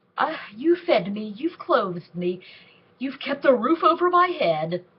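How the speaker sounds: mocking, stuck-up put-on voice. Retelling a scene where she mimics the old lady: retelling a character's mocking mimicry. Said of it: "then she starts, uh, mimicking her".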